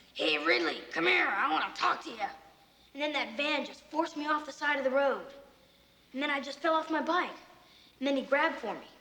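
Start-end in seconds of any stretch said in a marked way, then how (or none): 0.2-2.2 real mean, nasty tone, acted out. Testifying about a man leaning out of a van: imitating someone talking mean. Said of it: "he said real mean like".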